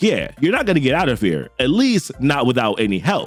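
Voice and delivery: ordinary talk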